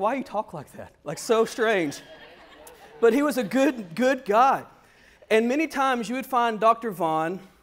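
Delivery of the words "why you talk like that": normal talking voice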